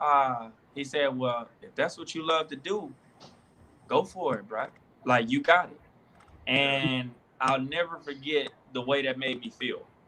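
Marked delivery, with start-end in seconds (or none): 1.2-5.8 imitated New Orleans accent. Speaker recalling what a man told him about his pursuit, imitating a New Orleans accent. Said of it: "in his New Orleans accent".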